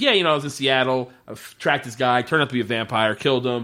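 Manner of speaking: mock casual, offhand, matter-of-fact, no-big-deal tone. Describing a favorite running gag from a show, imitating the character's matter-of-fact delivery. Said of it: "He just says it so matter of fact".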